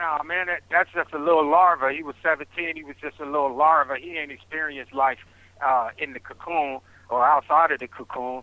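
normal talking voice

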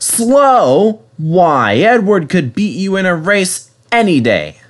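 offended, indignant snort, high, drawn out, slow. Two characters answer an insult aimed at their companion, indignant. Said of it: "they snorted".

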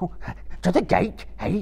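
very high, frightened squeaking voice. Reading fiction aloud, the narrator voices Gollum answering his master: Gollum's squeaky frightened voice. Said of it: "Gollum squeaked, seeming surprised and frightened".

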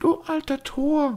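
high-pitched, blunt, unsparing tone. Reading a novel aloud, a daughter addresses her father before a group: quiet voice. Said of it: "sagte sie mit leiser Stimme".

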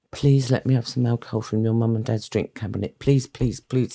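put-on pleading tone. Recalling begging a school friend, acting out the plea: retelling pleading with a friend. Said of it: "I pleaded with my friend".

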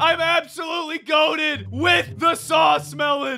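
high, shouted, very excited voice. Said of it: "Sorry, I'm just really excited".

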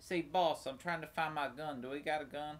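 put-on country voice. Voicing a character while playing a game: country accent. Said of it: "Why is he country?".

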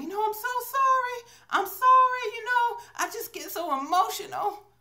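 play-acted sobbing, very high pitch. Retelling what the sobbing lady at the late movie said: imitating a sobbing woman. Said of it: "the lady was for real sobbing".

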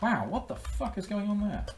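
a little annoyed. Running out of time to get a call made: a little annoyed. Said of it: "Getting a little annoyed".

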